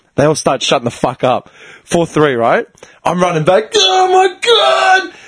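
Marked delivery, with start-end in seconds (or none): 3.7-5.1 very high, shrill, head-off scream. Retelling running back after another goal: retelling screaming. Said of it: "I'm screaming my head off".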